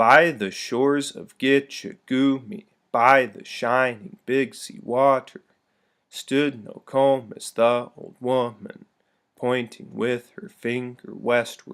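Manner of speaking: exaggerated trochaic stress on first syllables of Gitche Gumee. Reading a poem aloud to show its rhythm: exaggerated trochaic stress on first syllables. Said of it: "I'll read it with the correct rhythm... I'm stressing it more than you would".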